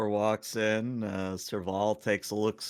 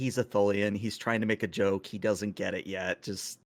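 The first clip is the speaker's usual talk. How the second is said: usual speaking voice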